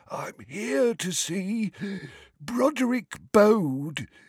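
put-on very high, wheezy old man voice. Reading aloud, the narrator voices a very old wizard at the front of a queue, wheezing. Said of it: "he wheezed".

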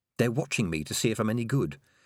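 ordinary delivery

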